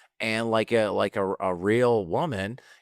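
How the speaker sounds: ordinary talk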